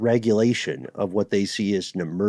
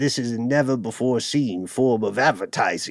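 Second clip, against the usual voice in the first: put-on British villain accent; 3 semitones higher than usual. Quoting the vice president of marketing at Molson Coors: British villain voice. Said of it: "I don't know why he sounds like a British villain".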